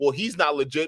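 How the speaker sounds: ordinary delivery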